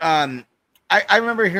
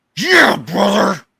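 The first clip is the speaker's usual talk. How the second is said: loud, rough, gravelly wrestling-style bellowing shout; 4 semitones higher, 6 dB louder than usual. Saying what he'll be like as Hulk Hogan: Hulk Hogan impression. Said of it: "give myself the blonde Hulk Hogan and be like".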